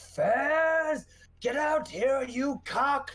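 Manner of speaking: very high, slow, drawn-out bellowed battle yell. Calling out an enemy during a fight: yelling in character. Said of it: "and I just yell".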